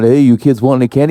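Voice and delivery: ordinary delivery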